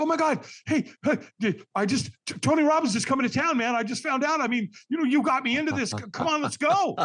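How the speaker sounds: mock very high, kid-like, overexcited, stumbling babble. Retelling a friend's phone call about Tony Robbins: imitating Dan's kid-like excitement. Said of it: "He's like a little kid that wants to show you a new toy".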